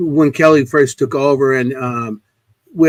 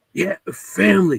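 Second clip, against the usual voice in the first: put-on raspy voice, higher and quieter; 4 semitones higher, 4 dB quieter than usual. Retelling the answer heard in Sal's voice: imitating Sal's raspy voice. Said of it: "'cause he had a raspy voice".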